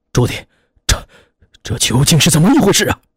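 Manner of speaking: quavering, trembling, high-pitched voice. Narrator reads Fogg's question to Zhu Di, in a trembling voice. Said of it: "他颤声着问".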